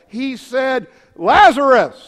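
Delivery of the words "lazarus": booming, very loud calling. Retelling a bible story, calling to a dead man in his tomb, retelling a loud call. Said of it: "the Bible says in a loud voice".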